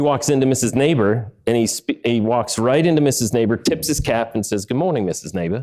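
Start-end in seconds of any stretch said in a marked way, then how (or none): 4.6-5.6 put-on, very British accent. Retelling a child greeting his teacher, imitating a very british accent. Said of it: "in a, a very British accent".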